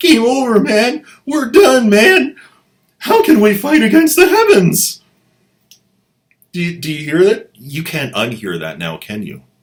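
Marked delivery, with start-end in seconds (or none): 0.0-5.0 put-on panicky soldier voice, higher and louder. Retelling a frightened Egyptian's line: freaked-out nervous guy from Aliens. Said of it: "sounds like that freaked out, nervous guy from Aliens".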